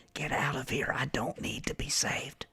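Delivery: whispering quickly. Voicing a prisoner leaning close to someone's ear: whispering quickly. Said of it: "he's gonna whisper real quick".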